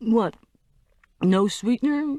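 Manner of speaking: high, unsure, doubtful tone with rising pitch. A narrator reads the rep's question over the hushed room, high uncertain voice. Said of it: "He said in a high, uncertain voice".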